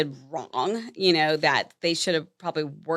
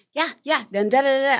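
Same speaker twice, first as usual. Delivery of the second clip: put-on child voice, higher; 8 semitones higher, 3 dB louder than usual. Retelling a child grabbing the phone: imitating a kid mimicking a phone call. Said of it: "acted like he was talking to my boss".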